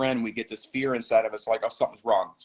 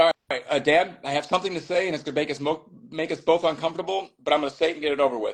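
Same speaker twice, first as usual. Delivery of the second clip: very fast, blurted out in one rush; 4 semitones higher than usual. Retelling what he said to his dad, said really fast. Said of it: "I say this really fast, really fast".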